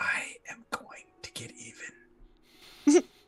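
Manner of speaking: menacing, threatening whisper. Voicing a character whispering a threat while boarding: menacing whisper. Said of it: "you just hear a whisper back to you".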